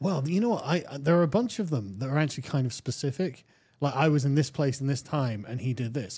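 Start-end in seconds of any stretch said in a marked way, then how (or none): none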